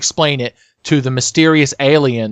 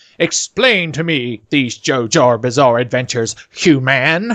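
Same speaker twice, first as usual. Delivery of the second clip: put-on alien voice. Playing a mysterious alien who demands explanations from things: put-on alien voice. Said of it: "I'll be the alien".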